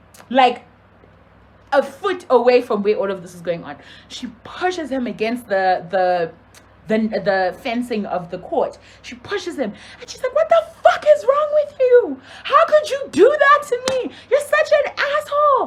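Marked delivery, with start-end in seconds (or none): 10.4-15.7 mock very high, loud, shrieking furious yelling. Retelling how a woman pushed a man against the court fencing, imitating her yelling. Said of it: "she's yelling at him".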